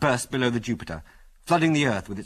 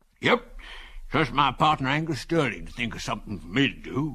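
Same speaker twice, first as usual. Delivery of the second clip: put-on wheezing, wheezy old man voice. A narrator reads an old man's words in a wheezy old man voice. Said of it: "continued the old man in a wheezy voice".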